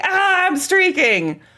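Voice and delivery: mock, very high, sudden shout. Acting out an imagined person's shout to chat: imitating someone yelling. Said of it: "If somebody yelled".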